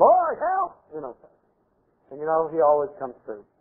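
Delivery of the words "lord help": put-on very high cry in a small, still voice. Retelling a desperate prayer during a confrontation with a demon: imitating a scream. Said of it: "In a still small voice, I screamed".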